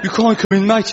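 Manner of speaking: put-on Birmingham accent. Showing off a Birmingham accent by acting out a little scene. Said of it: "The key to a Birmingham accent is try and sound as if your life's become a landslide".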